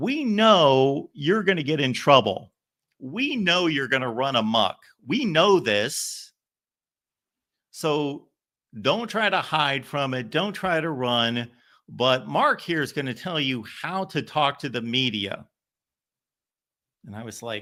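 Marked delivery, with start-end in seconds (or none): 0.0-15.5 thick, drawn-out Southern drawl. Retelling how Jackie Sherrill spoke to his football team, in Jackie Sherrill's Southern drawl. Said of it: "in his Southern drawl".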